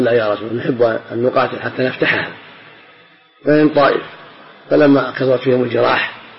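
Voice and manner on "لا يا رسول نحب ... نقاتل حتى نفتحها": normal talking voice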